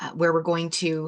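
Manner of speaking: ordinary delivery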